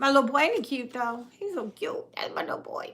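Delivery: put-on soft baby talk. After thanking everyone, a parent talks about their little boy like a baby. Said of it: "I'm talking like a baby".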